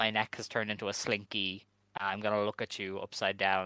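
plain

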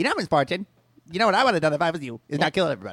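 cartoon voice with bouncing, swooping pitch. Voicing a wisecracking talking chipmunk speaking to Miss Barton: South Park voice. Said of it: "He has a South Park voice".

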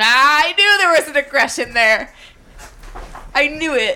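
loud, full-voiced, bursting shout full of certainty. Speaker reacts to hearing someone described as aggressive, shouting. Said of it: "Sorry for shouting".

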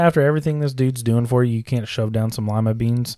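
ordinary talk

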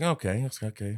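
ordinary talk, nothing marked

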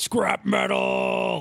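dim-witted brute's high, raspy charging cry. Voicing a charging brother yelling at a robot: yelling. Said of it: "he yells".

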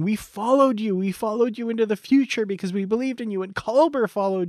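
yelled outburst. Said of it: "the whole thing where he's yelling".

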